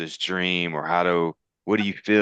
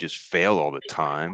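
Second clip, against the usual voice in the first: ordinary talk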